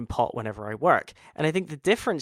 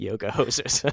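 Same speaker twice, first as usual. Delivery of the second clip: mock stoned voice, lower pitch; 4 semitones lower than usual. Imagining him high while watching dailies: imitating a stoned filmmaker. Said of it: "I can see him fucking lighting up a doobie".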